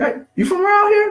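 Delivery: rising high pitch. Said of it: "My, my, my voice going up".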